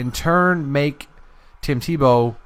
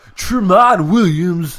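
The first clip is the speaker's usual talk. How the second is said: loud, pitched-up broadcast announcer voice; 5 semitones higher, 5 dB louder than usual. Reading out a player signing as a Joe Buck impression. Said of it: "That's my Joe Buck impression".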